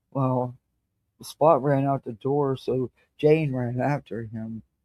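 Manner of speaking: droning, inflectionless, flat monotone reading. Showing how a dull reader sounds reading to kids, flat monotone reading. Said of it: "somebody in a monotone voice just reads".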